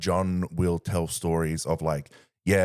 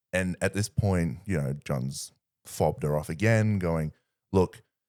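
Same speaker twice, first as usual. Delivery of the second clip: ordinary delivery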